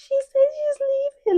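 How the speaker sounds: very high-pitched voice in full tears, squeaking. Retelling how Kenny went to Leo and Serena, imitating Kenny crying, high-pitched. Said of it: "in a really high pitched voice".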